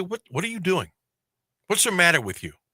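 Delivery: high, demanding, confrontational, in-your-face tone. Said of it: "And I will confront you".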